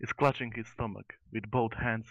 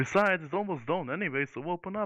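high-pitched furious shout; 7 semitones higher than usual. Narrating a gnome answering the gate guard, yelling back. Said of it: "The gnome is yelling back at the guard".

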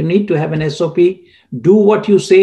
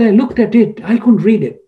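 put-on heavy Egyptian accent, higher; 4 semitones higher than usual. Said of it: "a very heavy Egyptian accent".

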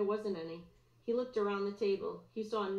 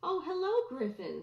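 genuinely warm, sincere, pitched up; 6 semitones higher than usual. Mrs. Rosen, a lunch aide, greeting Griffin back with genuine warmth. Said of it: "There was genuine warmth in her voice".

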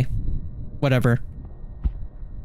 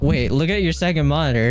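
ordinary talk

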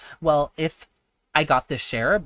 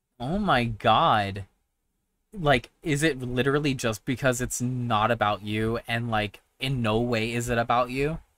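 normal talking voice

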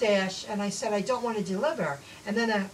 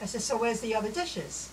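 normal talking voice

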